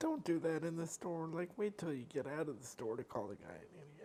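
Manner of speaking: soft, hushed voice. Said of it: "And I was like".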